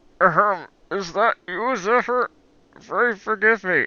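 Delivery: slow, smothered, muffled put-on character voice. Voicing a character's line, the speaker opts for a muffled put-on voice. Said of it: "Or I'll just do a muffled voice".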